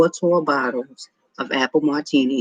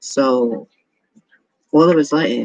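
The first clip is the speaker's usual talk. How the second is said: ordinary delivery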